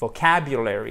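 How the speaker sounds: vocabulary with stress on second syllable cab. English vocabulary lesson on word stress, stress on cab in vocabulary. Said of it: "vous avez l'accent tonique sur la deuxième syllabe".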